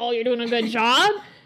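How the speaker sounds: ordinary delivery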